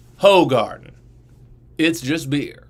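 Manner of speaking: commercial voice-over announcer, ad-reading narrator style. Speaker describes his beer video, voicing the shot of the beer: narrator voice. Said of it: "I have like a the narrator voice go".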